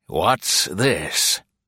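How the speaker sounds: gruff, rough voice. Narrator voicing an armed stranger questioning Val and another woman, gruff. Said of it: "he asked gruffly".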